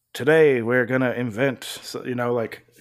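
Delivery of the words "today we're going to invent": commercial narrator voice. Imitating how Silas talks, like a car commercial: Matthew McConaughey-like voice. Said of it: "Silas sounds a little bit more like Matthew McConaughey".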